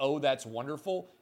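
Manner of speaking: ordinary talk, nothing marked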